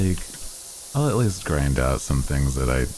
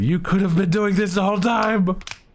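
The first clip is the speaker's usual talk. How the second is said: put-on high, shrill, shrieking yell, pitched way up; 4 dB louder than usual. A player apologizes for a mistake, imitating someone screaming at them. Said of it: "You're probably screaming at me like".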